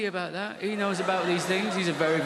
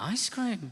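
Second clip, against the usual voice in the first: baffled, puzzled little echo with questioning tone; 4 dB quieter than usual. Retelling his own reply to his daughter: retelling his own puzzled reply. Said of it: "I was like".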